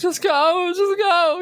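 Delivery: very high, slow, tearful, falling-apart voice. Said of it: "She's in, like, in bits".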